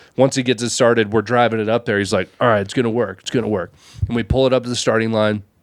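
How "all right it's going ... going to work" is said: put-on panicked voice. Retelling dad on the headset getting the engine started: imitating a panicking dad. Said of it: "a full-blown panic attack".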